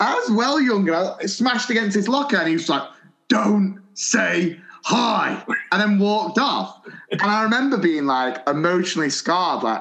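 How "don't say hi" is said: rough, hostile, aggressive gravelly voice. Retelling the geography teacher's words after a locker throw: imitating Mister Burns's aggressive gravelly voice. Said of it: "aggressive gravelly voice".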